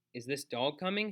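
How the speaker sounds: ordinary delivery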